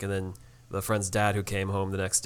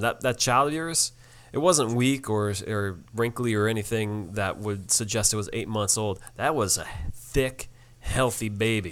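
normal talking voice

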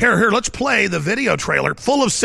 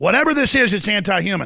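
plain

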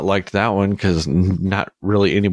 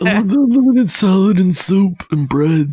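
mock mafia don voice, louder; 12 semitones higher, 4 dB louder than usual. Imagining ordering at Olive Garden that way, Brando Godfather voice. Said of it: "I kind of just want to start ordering like that".

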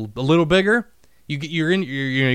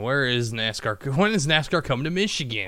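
playful character voice; 4 dB quieter than usual. Looking up the next race, doing a best Jamie impression. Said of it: "best Jamie impression".

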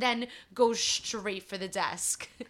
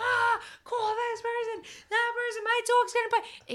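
very high, shrieking screaming outburst; 13 semitones higher than usual. Retelling a woman being escorted away: imitating a woman screaming. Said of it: "So she's screaming".

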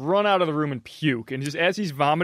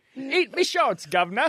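high, put-on British accent; 9 semitones higher than usual. Joking about a cartoon catchphrase: British Bart Simpson voice. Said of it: "Bartholomew Simpsonsbury".

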